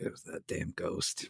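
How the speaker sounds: soft whisper. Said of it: "you're like".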